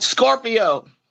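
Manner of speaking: punchy, emphatic, shout-toned single word. Answering a question about her zodiac sign: screaming. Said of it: "Why is she screaming?".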